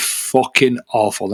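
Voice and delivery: emphatic stress on "fucking awful". Complaining about their own team's results: emphatic stress on "fucking awful". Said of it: "I'm swearing to emphasize how bad".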